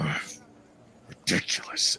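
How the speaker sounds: rough, irritated, fed-up brutish scoff. Voicing a tall muscular half-orc who stomps out: voicing an annoyed half-orc. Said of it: "He's like".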